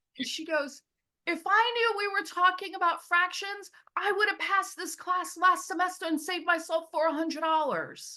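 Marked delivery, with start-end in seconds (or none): 1.3-8.2 very high, loud, furious angry rant. Retelling a student's words in an algebra class, imitating an angry student. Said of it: "one of my students got super angry".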